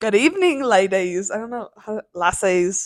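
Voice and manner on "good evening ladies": Irish accent impression. Retelling an Uber driver's greeting to friends, imitating an Irish Uber driver. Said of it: "I hope you did it better than this".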